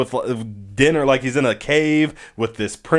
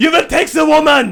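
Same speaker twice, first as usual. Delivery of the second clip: very high, loud, shrill, cartoonish German accent; 14 semitones higher, 6 dB louder than usual. Retelling what a man said to them, in a full-on German accent. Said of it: "full on German accent".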